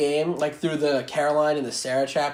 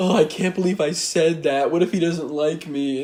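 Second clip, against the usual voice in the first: mock weepy, tearful, words through tears. Retelling a scene where Sarah turns away and hides her face: imitating Sarah crying. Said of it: "starts crying and hides her face and she's like".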